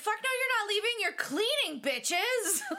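very high-pitched, bellowed, threatening-sounding yell. Retelling how he stopped the partygoers from leaving, imitating him yelling. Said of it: "he yells".

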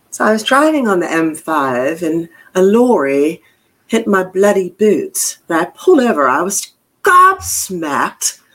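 put-on accent from England.

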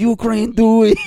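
shrill yell at full blast, very high and loud. Joking about celebrity videos for Ukraine: Rob Schneider impression. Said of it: "like Rob Schneider".

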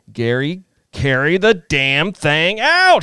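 play-acted, loud, rising, stretched-out screaming. Recalling a game, the speaker quotes a man screaming at him from the press box: retelling a scream. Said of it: "He's like screaming at me from the press box".

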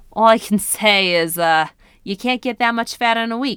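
put-on New York accent. Quoting what Zeno said, in Zeno's New York accent. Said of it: "he actually kind of says it with like a New York accent".

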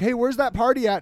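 ordinary talk

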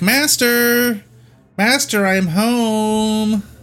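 very high-pitched, long, drawn-out calling voice. Voicing a character who walks in calling for his master: calling out to his master. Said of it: "He walks in and, like".

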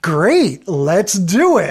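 put-on happy, grinning, smiling voice. Retelling a man's reply given with a big grin, imitating a happy, grinning reply. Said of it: "he does that big grin and smile".

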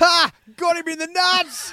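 mock laughing. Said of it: "as soon as he's laughing".

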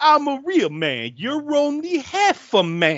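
very high, very slow, loud, drawn-out macho tough-guy voice. Retelling a film's "only half a man" line: Andrew Dice Clay voice. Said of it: "why does he suddenly sound like Andrew Dice Clay".

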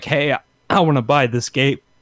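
voice catching, breaking and cracking, frog in throat. Quoting what you'd say to the cashier, frog in the throat. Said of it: "Frog in my".

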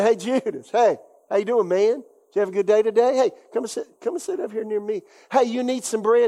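kind, friendly, easygoing, welcoming tone. Retelling how Jesus greets Judas at the meal: imitating Jesus being kind. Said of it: "How was he kind? He said".

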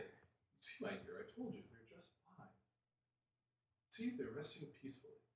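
soft, hushed, breathy whispered voices. Narrating a scene where resting characters wake to hear voices, whispered. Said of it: "you hear the sound of whispered voices".

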